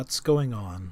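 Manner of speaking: very quiet, hushed, soft-spoken voice. Voicing a bleary-eyed character who just woke up: speaking very quietly. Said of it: "he is speaking very quietly".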